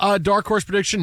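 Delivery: ordinary delivery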